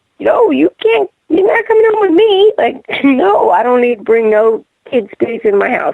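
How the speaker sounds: high, firm, emphatic delivery.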